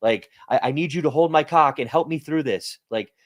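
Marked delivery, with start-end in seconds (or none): 0.5-2.8 frantic, pleading panic, losing nerve. Acting out people who sell when prices drop: imitating a panicking investor. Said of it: "ninety-nine percent of people think like that".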